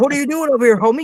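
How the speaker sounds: very high-pitched, confrontational yelling. Retelling how a tour manager yelled at a photographer: imitating someone yelling. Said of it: "tour manager came up and yelled at me".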